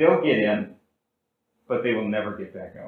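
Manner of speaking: put-on calm, quiet voice. Speaker retells a man's answer to one of the speaker's members, imitating a calm, quiet reply. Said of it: "calmly, quietly said".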